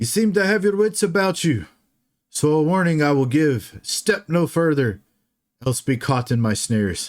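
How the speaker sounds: high, assertive, commanding call, sounding from far off. Narrating a game, voicing an unseen figure calling a warning from far off, assertive. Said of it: "you hear an assertive voice call out".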